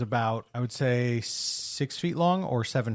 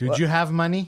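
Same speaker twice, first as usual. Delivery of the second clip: loud put-on Mexican accent; 4 semitones higher, 5 dB louder than usual. Imitating a man who kept asking about money: imitating a Mexican accent. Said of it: "And he was like".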